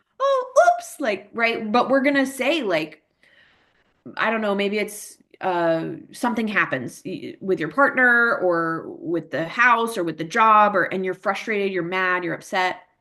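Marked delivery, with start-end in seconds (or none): 0.2-1.0 very high, exaggerated, over-the-top baby talk. Showing how one talks to a baby: exaggerated tone used with a baby. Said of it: "that exaggerated with a baby".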